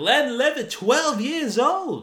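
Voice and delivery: high, loud, drawn-out yell. Retelling a movie character's line: yelling a movie line. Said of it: "he yells out".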